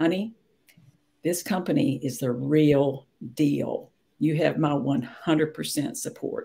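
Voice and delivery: grave, earnest, dead serious, drawn-out delivery. Speaker quotes what a man told her after three hours studying, real serious voice. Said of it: "this real serious voice".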